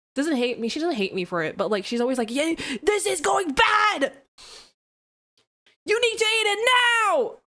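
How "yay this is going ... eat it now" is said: loud, high, blared-out, acted-out voice. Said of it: "I'm already being loud".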